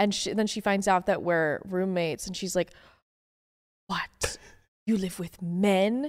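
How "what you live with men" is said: put-on heavy Eastern European accent, much slower. Retelling a woman's reaction to hearing about male roommates, very Eastern European accent. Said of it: "very Eastern European".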